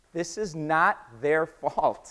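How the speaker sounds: slow, with NOT hit hard. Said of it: "I want to be very, very clear".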